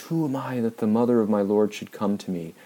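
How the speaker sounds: play-acted excited cry, kept modest. Picturing Elizabeth greeting the mother of her Lord at the door, yelling. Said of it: "Elizabeth just yells".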